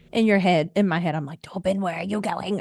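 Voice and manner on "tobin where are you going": hushed whisper. Retelling calling out to someone going off, whispering. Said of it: "I'm whispering like everybody can still hear me".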